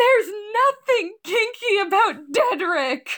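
indignant screaming, pitched way up, high. Retelling a reply to a sister's teasing, re-enacting a scream. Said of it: "And I screamed".

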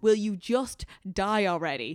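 put-on screaming, heckler-style yelled cry. Retelling an outburst in the cinema during a long fight scene: imitating someone screaming. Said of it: "screamed out".

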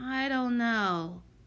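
muttered, mumbling under breath. Reading the boy answering Solly, muttered. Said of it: "muttered the pinch-faced boy".

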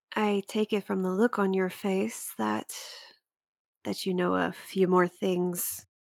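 gentle, softly spoken voice. Breaking a long silence, a woman finally speaks: soft voice. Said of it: "her voice soft".

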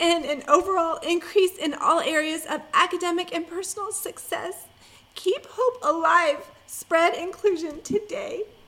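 fighting back tears. Interviewer reads the guest's website quote to end the interview: holding back tears. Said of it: "I'm going to try to say this without falling apart".

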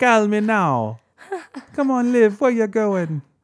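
very high put-on Jamaican accent drifting into British. Imitating the listener's mom calling to Liv: put-on Jamaican accent, slipping British. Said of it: "It almost went British just now".

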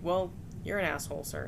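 usual speaking voice

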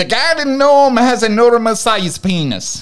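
put-on Irish accent. Asked to read the next one in an Irish accent. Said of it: "Do that one in an Irish accent".

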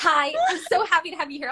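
high, bubbly, giggly, excited voice. Welcoming a guest at the start of a live session, giggly and excited. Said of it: "all giggly and, like, like, vibrating right now".

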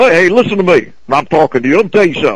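put-on South Carolina accent. Describing the guys he grew up with in South Carolina, their way of talking. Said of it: "That's the way they would talk".

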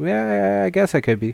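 high-pitched, hesitant, sheepish voice.

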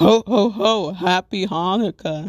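festive ho-ho-ho, done roughly and slightly off. Speaker acts out greetings Santa Claus never says, in a Santa Claus impression. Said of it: "my Santa Claus impression is off".

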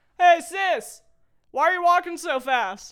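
very high, very loud, drawn-out yell. Retelling a grown man following her down the school hallway; retelling a yell. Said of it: "he yells".

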